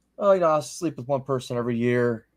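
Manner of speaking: normal talking voice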